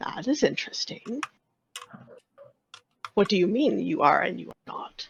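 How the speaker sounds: rumbling, throaty voice. Storyteller voices a coiling creature questioning the newcomers: throaty rumble. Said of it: "it speaks to you in a throaty rumble".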